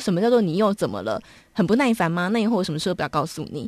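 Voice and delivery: ordinary talk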